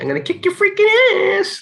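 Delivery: very high voice swooping and swinging around. Recalling a hilarious movie scene where the guys stumble upon each other, in a high-pitched Pee Wee voice. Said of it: "Pee Wee with his high pitched voice".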